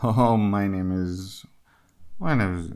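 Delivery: apologetic, sorry-sounding voice, slow falling tone trailing away. Acting out an apologetic job seeker's introduction: imitating apologetic falling tone. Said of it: "the tonality goes down".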